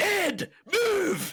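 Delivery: very high-pitched, loud shouting yell. Retelling a movie scene where the Scottish dad yells at his son: imitating a dad yelling. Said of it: "And he just yells".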